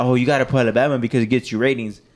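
ordinary talk

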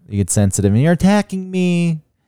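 very high, teasing, mocking parody tone. Answering a co-host who objected to criticism: mocking tone. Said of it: "don't use that mocking tone".

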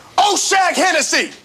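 high, loud, furious teacher-style yelling.

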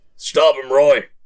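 loud yelling.

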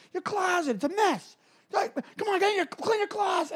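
put-on yelling. A speaker acts out what he said to her in her room, retelling someone yelling. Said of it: "he got all like yelling and screaming".

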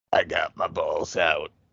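very deep, very slow, rough gravelly voice. Imitating how it occasionally talks to them, in a gravelly voice. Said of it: "it'll just be like a gravelly voice".

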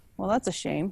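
dry, sarcastic, insincere regret. Reacting in character to three bodies in the courtyard: sarcastic. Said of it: "I say sarcastically".

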